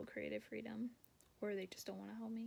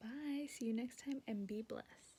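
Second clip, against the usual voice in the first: polished tv commercial announcer voice. Trying out a new sign-off line, sounding like a TV commercial. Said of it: "I sound like I'm in a commercial".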